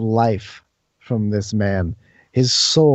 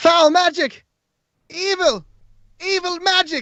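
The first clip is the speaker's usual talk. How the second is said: crowd screaming, very high-pitched. Voicing the guards and people who see them: screaming. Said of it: "the people scream".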